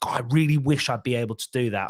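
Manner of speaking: ordinary talk, nothing marked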